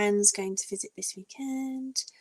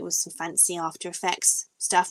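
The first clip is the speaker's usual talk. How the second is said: plain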